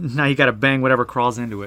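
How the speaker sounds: ordinary delivery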